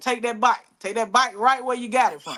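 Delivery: thick, heavy rural Southern country accent. Showing how country the speaker can sound: heavy country accent. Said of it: "sometimes I can get real country".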